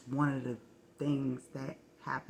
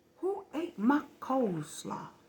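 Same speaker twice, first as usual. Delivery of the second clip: very high, shrill, furious shout; 12 semitones higher, 5 dB louder than usual. Retelling hearing Mom ask about the coleslaw: imitating an angry voice. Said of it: "I heard a very angry voice go".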